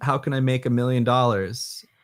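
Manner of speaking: ordinary talk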